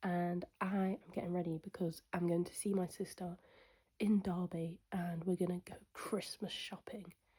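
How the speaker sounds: talking quietly. Welcoming back an audience on Sunday while someone sleeps in the other room, talking quietly. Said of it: "I'm talking quietly".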